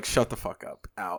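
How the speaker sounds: hushed stage whisper. Retelling what his wife would say about loud yelling music: imitating his wife. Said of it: "Melina would be like".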